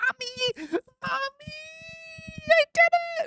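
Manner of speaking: unhinged, crazed, very high, acted-out shriek. Retelling an awards winner's speech: imitating a crazed shout of Mommy. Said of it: "looks to his camera off to the side to say".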